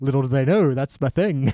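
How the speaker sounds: plain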